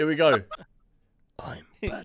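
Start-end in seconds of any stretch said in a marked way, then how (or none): 1.4-2.0 hushed, breathy whispered hero voice, barely audible. Taking a turn doing an impression for friends, whispered Batman impression. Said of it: "You were whispering".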